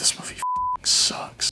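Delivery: mock muttering under breath. Recounting the listener's dad watching the new movie, retelling a muttered remark. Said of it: "under his breath".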